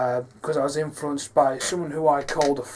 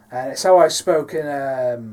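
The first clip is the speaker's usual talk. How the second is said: ordinary talk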